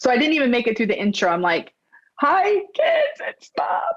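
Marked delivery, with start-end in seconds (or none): 2.2-3.9 mock crying voice, very high and slow. Retelling recording a video message to family: imitating own crying. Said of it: "crying right away".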